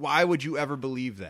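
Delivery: plain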